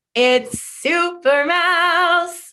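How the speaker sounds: eager, thrilled, excited, high and stretched out. Reading the book's title aloud together before a story, excited. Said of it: "I love how excited you sounded".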